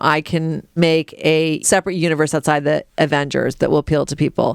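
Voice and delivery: ordinary talk, nothing marked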